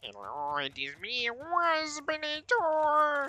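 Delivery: very high, loud, slow, swooping character voice. Showing the Waspinator voice for a voice acting audition: Waspinator voice. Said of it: "I can do".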